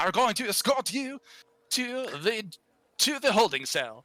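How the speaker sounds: over-the-top fake French accent, high and ridiculous. Voicing an official in a role-play scene, addressing a young lady: ridiculous french accent. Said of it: "ridiculous French accent".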